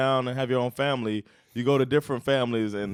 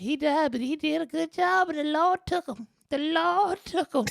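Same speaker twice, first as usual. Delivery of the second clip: put-on woman's voice, higher pitch. Retelling a woman's speech at a funeral: imitating a woman's voice. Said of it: "when you did that voice".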